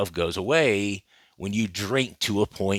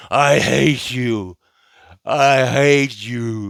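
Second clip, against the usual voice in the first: put-on drunken slurring, very slow and drawn out; 4 semitones higher, 4 dB louder than usual. Describing famous police body cam footage of an athlete, quoting him: imitating drunken slurring. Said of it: "ranting and raving and slurring his words".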